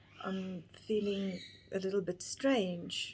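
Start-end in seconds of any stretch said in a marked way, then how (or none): none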